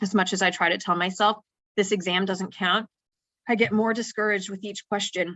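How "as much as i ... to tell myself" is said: usual speaking voice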